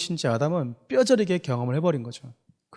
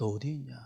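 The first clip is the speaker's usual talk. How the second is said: aching, pained, sorrowful call full of hurt; 3 semitones lower, 10 dB quieter than usual. Explaining god's calling by acting it out: acting out a pained call. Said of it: "이거는 상당히 아픔이 담겨져 있는 말투인 거야".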